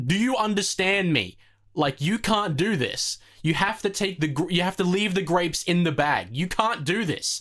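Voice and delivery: put-on, irate, angry shouting. Recounting standing with milk while the dude behind the register shouts, retelling his shouting. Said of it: "start shouting".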